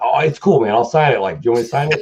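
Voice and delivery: broad, thick put-on Boston accent. Retelling what a man said to the speaker, imitating a Boston accent. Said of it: "mostly this Boston kind of accent".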